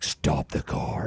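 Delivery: demonic, possessed demon voice. Retelling his wife ordering the car stopped near the Eiffel Tower: Damien voice. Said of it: "this Damien voice comes out".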